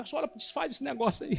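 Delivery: crying, high, tearful, begging plea. Retelling a boy's plea to the pastor: imitating someone crying. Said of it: "ele veio chorando, falando assim".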